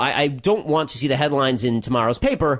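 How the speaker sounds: ordinary delivery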